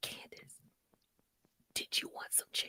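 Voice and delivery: odd, secretive, hushed, breathy whisper. Complaining that a woman whispers while the speaker is on the phone, imitating her whispering. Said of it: "she does this weird whisper shit".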